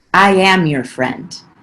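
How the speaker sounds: put-on creepy voice. Retelling how a teacher responded to hearing about having no friends, imitating a creepy teacher. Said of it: "creepily like touched my hand and was like".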